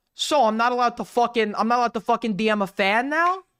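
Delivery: heavy, laid-on, exaggerated New York accent. Imitating a streamer defending himself: Nicholas Diorio impression with played-up New York accent. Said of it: "I played up the New York accent".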